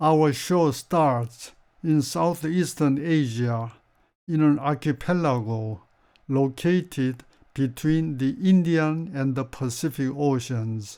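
very slow, careful, easy-to-follow English newsreader-style reading.

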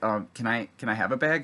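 normal talking voice

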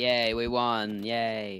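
ironic, unexcited yay. Player reacting as the team wins with seconds left: sarcastic yay. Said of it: "That's the most sarcastic sounding yay I've ever heard".

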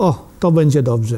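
normal talking voice

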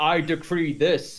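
ordinary talk, nothing marked

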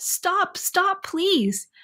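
high-pitched, stumbling, halting, stammering pleading voice. Reading a character's plea as a roaring horde closes in, stammering plea. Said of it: "stammered Richard".

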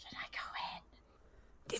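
very slow, hushed whisper. Speaking in character to party members at a dark doorway: in-character whisper.

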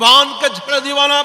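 put-on high, loud shout like a crying baby.

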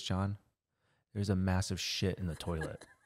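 hushed, quiet, close half-whisper. Retelling how the mom half-whispered a warning in the ear: imitating a half-whisper. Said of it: "whispers in my ear".

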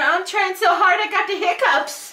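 put-on tiny, squeaky, very high baby voice. Speaking for a baby who is trying hard to talk: voicing the baby. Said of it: "She said".

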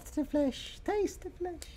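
very tiny little voice. Voicing a small puppet belonging to the doll, in a very, very tiny voice. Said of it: "very, very tiny voice from this tiefling box".

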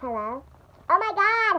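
high, squeaky chipmunk-like helium voice. Right after inhaling helium from a deflating balloon pig, helium chipmunk voice. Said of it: "I sound like a chipmunk".

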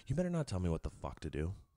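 really calm, collected, hushed voice. Retelling what a man in a street fight said: quoting someone very calmly. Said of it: "the dude was like, really calmly".

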